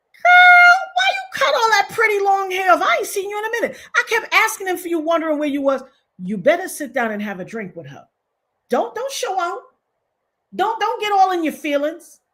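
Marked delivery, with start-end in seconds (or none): 0.2-5.9 chatty, pitched-up tone. Acting out the cousin greeting the girlfriend, imitating the cousin greeting her. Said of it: "When that cousin come over and say".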